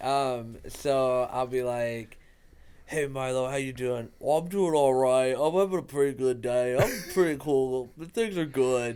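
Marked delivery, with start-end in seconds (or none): 4.2-9.0 dim, dopey put-on dog voice. Voicing the dog Milo answering how he's doing: dopey Milo voice. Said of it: "Like real kind of dopey voice".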